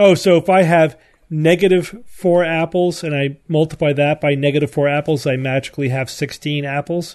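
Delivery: ordinary delivery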